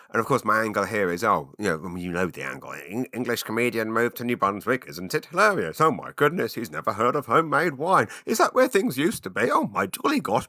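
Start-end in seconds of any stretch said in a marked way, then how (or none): 2.8-10.5 put-on, contemptuous, sneering, mocking voice. Imitating how someone who hates him would describe him, mocking impression of himself. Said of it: "That's my impression of me by a person who hates me".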